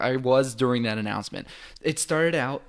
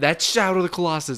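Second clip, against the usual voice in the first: play-acted, loud, high-pitched shrieked scream; 5 semitones higher, 6 dB louder than usual. Retelling seeing the bridge during an announcement: retelling own scream. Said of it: "I just screamed".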